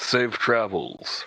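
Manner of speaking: forced, fake politeness covered in malice. Voicing a character bidding departing guards farewell: forced politeness covered in malice. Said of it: "tries to say that as nicely as possible. It's just completely covered in malice".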